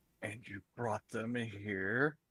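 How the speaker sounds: snarled, growly voice, drawn out. In a role-played scene, a woman character questions the group: growling. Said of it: "she growls as she says this".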